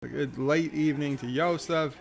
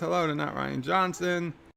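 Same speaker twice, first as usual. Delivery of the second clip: ordinary talk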